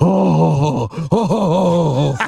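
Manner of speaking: deep, mocking voice, "oh" moaned out. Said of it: "He had that deep voice".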